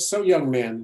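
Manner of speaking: ordinary delivery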